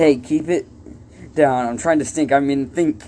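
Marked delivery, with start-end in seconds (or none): none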